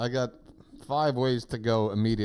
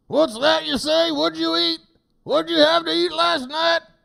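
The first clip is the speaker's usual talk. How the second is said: loud, very high, gruff, rough working-man voice; 9 dB louder than usual. Mocking the ad's dinner talk: imitating a man working in hard conditions. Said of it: "talk like a man working in hard conditions".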